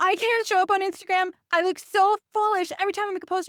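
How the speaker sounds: very high-pitched, panicky, worried fretting. Setting up a role-play for Laura, voice the client, playing a panicking client. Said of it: "She's absolutely panicking".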